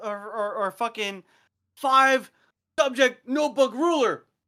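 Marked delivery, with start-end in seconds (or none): 1.8-4.2 high-pitched, loud shout. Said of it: "just shouted".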